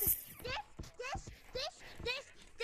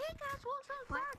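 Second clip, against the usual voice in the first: very slow, drawn-out put-on squeaker kid voice. Joking about an invite from some kid, doing a squeaker voice. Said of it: "I'm trying to do my squeaker voice".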